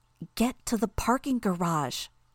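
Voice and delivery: hissing through the teeth. She repeats her order to the group as an enemy steps forward, hissing through her teeth. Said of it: "she hissed through her teeth".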